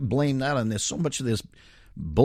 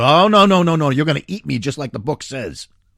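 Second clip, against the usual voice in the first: furious, very loud, angry outburst; 2 semitones higher, 9 dB louder than usual. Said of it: "she gets really mad".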